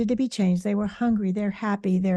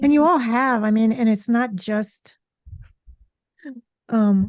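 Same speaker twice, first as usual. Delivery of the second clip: words breaking up with laughs; 4 dB louder than usual. Starting a point to the others, laughing while talking. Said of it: "I'm sorry, I'm laughing".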